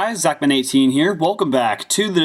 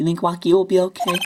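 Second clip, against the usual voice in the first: small, wee, little tiny high voice; 5 semitones higher than usual. Voicing a character who asks a detective about Waki, in a little tiny voice. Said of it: "I'm gonna go with the ti- little tiny voice".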